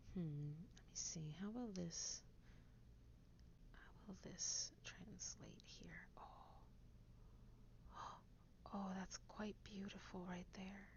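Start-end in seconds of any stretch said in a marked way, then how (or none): 3.7-10.9 soft hushed whisper. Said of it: "I don't know why I'm whispering".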